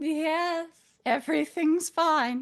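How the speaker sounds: high, mom-like motherly voice. Running to the door and answering it, in an impression of the player's dead mom. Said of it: "in my best impression of my dead mom".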